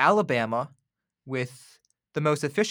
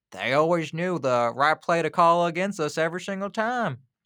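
bad, laid-on Southern accent; 3 semitones higher than usual. Quoting a football coach, speaker uses a bad Nick Saban Southern accent. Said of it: "It's a bad Southern accent".

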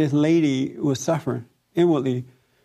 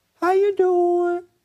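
timid little voice, pitched very high. Retelling what she told Michelle about speaking to customers, imitating Michelle's soft timid voice. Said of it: "her voice is like really soft and timid".

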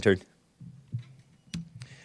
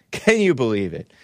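ordinary talk

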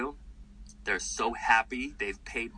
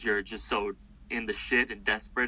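normal talking voice

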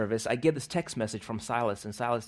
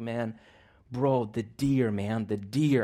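acted, slow, tearful crying through the words. Retelling a phone call with a man after hearing his voicemail, imitating him crying. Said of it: "he's just crying. He's like".

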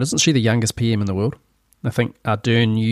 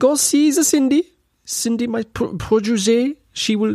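put-on accent drifting toward French, pitched higher; 13 semitones higher than usual. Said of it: "this is getting French".

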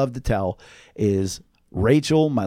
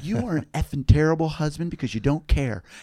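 put-on screaming rant, higher pitch; 4 semitones higher than usual. Retelling a party fight where a wife screamed at her husband: imitating someone screaming. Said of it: "Jenna would be screaming in his face".

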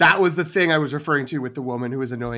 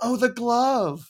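very loud, very high, shrill exclamation; 9 semitones higher than usual. Retelling what the woman next to them said during the movie, very loud exclamation. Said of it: "very loudly goes".

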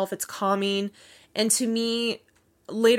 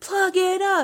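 mock women's yell, much higher; 10 semitones higher than usual. Recounting a scene where women in a locker room turn on Carrie, imitating their yelling. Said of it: "they're yelling".

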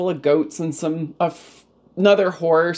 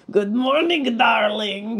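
mangled, badly worn French accent; 5 semitones higher than usual. Retelling the coach's morning greeting to the speaker, ruined French accent. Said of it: "with his ruined French voice".

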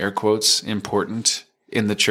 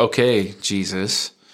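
dripping with sarcasm and disdain. Retelling a bratty prayer once said, imitating own sarcastic, disdainful prayer. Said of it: "with as much sarcasm and disdain as I could muster".

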